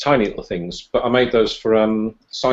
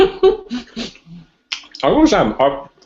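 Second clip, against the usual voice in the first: talking with mouth full; 8 semitones higher than usual. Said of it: "took me on my mouthful".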